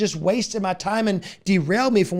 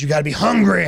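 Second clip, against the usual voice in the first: deep, low, booming delivery; 2 semitones lower, 5 dB louder than usual. Quoting a favorite motivational speaker: Les Brown voice. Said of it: "he says it with that deep voice he has".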